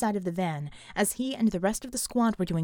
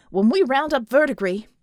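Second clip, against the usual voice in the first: hot, eager, heated, raised voice; 4 semitones higher, 8 dB louder than usual. Colt answers Bulwark, then adds a further remark, heatedly. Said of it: "added heatedly".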